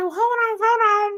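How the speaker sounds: very high-pitched, incredulous protesting voice. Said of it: "And I'm like".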